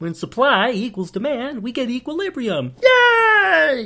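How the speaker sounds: lecture voice, "yay" drawn out, high and slow. Imitating an economics professor who sounds like Kermit the Frog. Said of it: "He sounds like Kermit the Frog".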